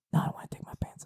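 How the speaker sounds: muttering under the breath. Retelling muttering a movie quote while watching with her, under the breath. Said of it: "under my breath".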